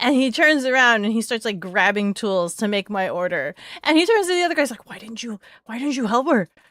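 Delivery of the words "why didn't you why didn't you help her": put-on flustered, panicked blurt with stumbling repeat. Retelling how he turned to the other guys: imitating frazzled panic. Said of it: "he's so frazzled and panicked".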